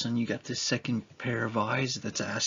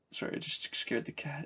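ordinary delivery

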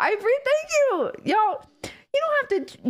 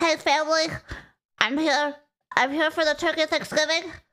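mocking, teasing, eager viewer voice; 3 semitones lower than usual. Imitating a viewer greeting family, mocking viewer impression. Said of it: "This is what you sound like".

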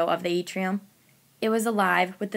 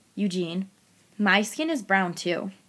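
ordinary delivery

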